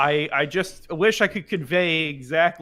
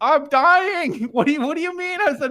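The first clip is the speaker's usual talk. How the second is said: plain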